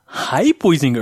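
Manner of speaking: very patronizing, condescending talking-down tone. Imitating how a costumed Willy Wonka talked to the others: Johnny Depp Willy Wonka voice. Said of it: "like the Johnny Depp version".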